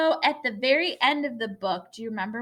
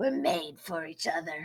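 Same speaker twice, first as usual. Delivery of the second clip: hushed, very low, soft monster growl; 7 semitones lower, 5 dB quieter than usual. Reading a story aloud, give the monster's line as he growled it. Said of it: "he growled".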